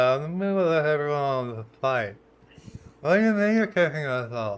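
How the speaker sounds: mock sloppy drunken slurring of words. Retelling a woman being kicked off a flight, imitating a drunk woman. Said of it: "She just sounds drunk".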